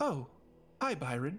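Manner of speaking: lilting, sing-song, almost purring voice. Voicing Shireen greeting Byron in the doorway: sing-songy purring voice. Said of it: "his sing-songy voice almost purring".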